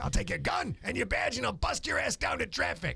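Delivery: gruff, rough, tough-talking police sergeant voice. Chatting with others, doing a character bit: police sergeant voice. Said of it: "That's my uh, sergeant, police sergeant voice".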